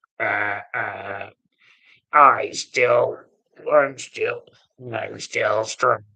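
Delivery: very slow, robotic, mechanical electrolarynx voice. Speaker recalls a woman with a voice box, imitating her voice box voice. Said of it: "that lady with the voice box".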